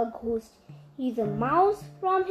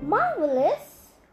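cried out happily, joyful; 2 semitones higher than usual. Narrator reads Kripala answering the mouse Billy Squeakspear, cried happily. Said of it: "Kripala cried happily".

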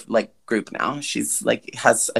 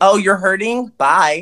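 raised, high-pitched, careless, dismissive tone; 7 semitones higher, 5 dB louder than usual. Mocking a sibling by acting out her words: imitating Lindsay. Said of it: "She's like".

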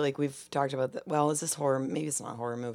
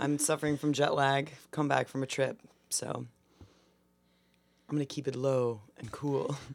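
dramatic, cool new voice. Back from a trip with jet lag, opening the show in a dramatic lower voice. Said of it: "I'm debuting a dramatic lower voice".

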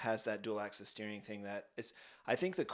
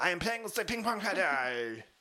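loud, very high put-on French-accented English; 9 semitones higher, 7 dB louder than usual. Swapping a German accent for a French one: Romain Grosjean accent. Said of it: "That is my Roman Grosjean accent".

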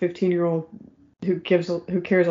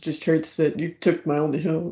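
usual speaking voice

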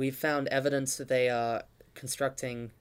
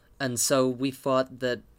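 usual speaking voice

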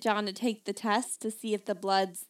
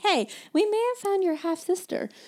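high, bright-pitched, cheery mock announcer voice.

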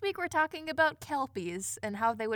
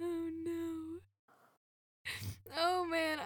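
very slow, high, drawn-out words through laugh-crying; 5 semitones higher, 5 dB quieter than usual. Reacting to a joke about a family killed by bats, crying with laughter. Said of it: "I'm like actively crying".

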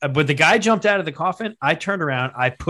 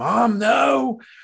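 mock child voice, high, screaming in protest; 7 semitones higher than usual. Retelling being taken into a haunted house as a child: imitating own screaming. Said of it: "And I'm screaming".

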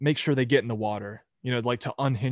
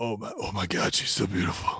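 put-on drunken voice, pitched lower; 4 semitones lower, 4 dB quieter than usual. Retelling an interview with a Brazilian interviewer: drunk Vin Diesel impression. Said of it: "Vin Diesel drunkenly doing an interview".

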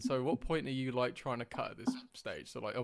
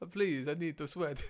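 mock desperate begging in broken Italian, higher; 3 semitones higher than usual. Retelling a plea to be let in to sweat in Italy: imitating a desperate plea in broken Italian. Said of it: "desperately trying to, like, get something broken, like, Italian".

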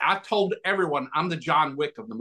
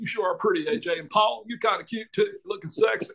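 high, weary, worn-out put-on voice; 6 semitones higher than usual. Doing an impression after mentioning being asked to play Bill Clinton: Bill Clinton impression. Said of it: "I sound just like him".

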